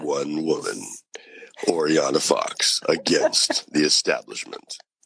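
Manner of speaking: slow movie-trailer narrator announcing voice. Doing a trailer voice, not their usual sound: movie trailer voice. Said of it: "I'm doing my trailer voice".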